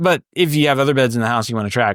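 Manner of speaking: ordinary delivery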